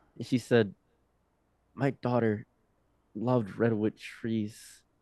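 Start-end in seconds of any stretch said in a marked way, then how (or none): 1.7-4.6 mock speech while crying hard. Retelling what the crying old lady said: imitating someone crying hard. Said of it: "just insanely crying".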